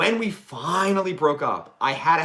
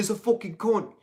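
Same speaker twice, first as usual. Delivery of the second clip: high fake British accent with punk swagger; 5 semitones higher than usual. Retelling how the speaker used to talk in jest, in a fake british accent. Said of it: "I'd walk around in a British accent".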